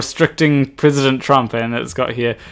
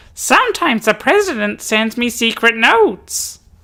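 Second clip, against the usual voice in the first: put-on very high, dopey, dim-witted kid voice; 9 semitones higher than usual. Reading out a meme's caption, trying Ralph voice. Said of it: "Let me try and do my uh, Ralph voice".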